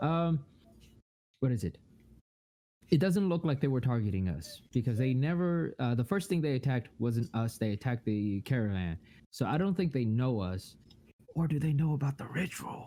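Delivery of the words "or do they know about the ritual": secretive, in-character stage whisper. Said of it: "I whisper that".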